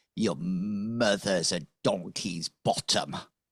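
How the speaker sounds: scornful, contemptuous, sneering tone. Voicing a character who sneers after being slapped: sneering. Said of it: "sneers at you and says".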